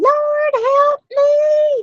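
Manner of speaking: shrill, very high, pleading scream. Retelling a story, the speaker acts out people rolling on the floor: imitating people screaming. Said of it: "screaming like".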